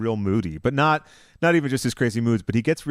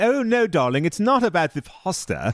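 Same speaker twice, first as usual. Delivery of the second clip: carried-away, pitched-up, very posh English accent; 7 semitones higher than usual. While trading impressions of the pasta line, show a very posh James Kennedy voice. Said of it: "very posh version of James Kennedy".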